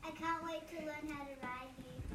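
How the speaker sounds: soft under-breath murmur. Beatrice, on the fence looking closely at the beautiful horse, speaks quietly to herself. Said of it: "she said quietly to herself".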